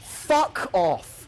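shouting. Playing a game and trapped in a corner, shouting. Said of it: "I didn't mean to shout".

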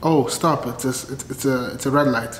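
ordinary delivery

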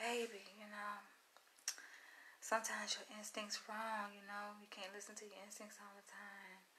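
very quiet, soft, sweet coaxing voice. Retelling how a partner tried to talk her round: imitating a soft, sweet voice. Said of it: "all the soft, sweet voice and shit".

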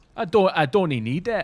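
imitated Scottish accent. Echoing a line just heard and asking about its accent, in a scottish accent.

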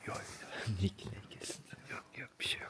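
hushed, soft, unvoiced whisper.

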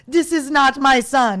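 fake French accent, slow, loud and drawn out. Retelling what a woman said back to them, in a put-on French accent. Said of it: "that's my French accent".

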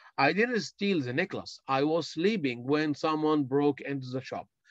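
ordinary talk, nothing marked

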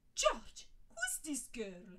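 loud, shocked, aghast, disbelieving, swooping pitch. Narrator voices Molly asking George about a sobbing girl, aghast. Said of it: "Molly asked aghast".

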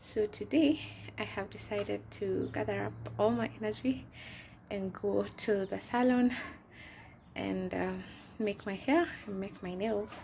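loud talking through heavy breathing. A pregnant vlogger telling viewers about her salon day: breathing heavily. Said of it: "I know I'm breathing heavily".

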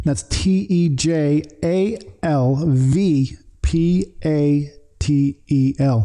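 slow, deliberate, spelled-out delivery. Repeating your website address for the audience, said slowly and spelled out. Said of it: "I have to say it slow".

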